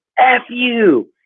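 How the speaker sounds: acted, shrill, high, as-loud-as-possible holler. Speaker retells a driver leaning out his window at him, retelling a loud yell. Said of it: "like as loud as he can".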